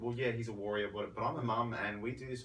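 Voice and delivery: ordinary talk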